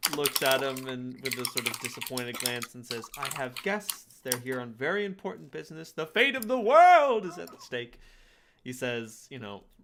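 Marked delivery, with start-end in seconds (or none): 3.2-8.0 loud, swooping, overblown grand delivery, self-aware. Retelling a game scene where McCavity answers a guard, mock dramatic. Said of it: "like dramatically, but also making fun".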